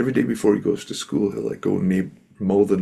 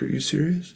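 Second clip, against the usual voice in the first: tearful, crying, pitched-up woman's voice; 8 semitones higher, 3 dB quieter than usual. Retelling an old woman's reply after she starts crying: imitating a crying woman. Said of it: "And she starts crying".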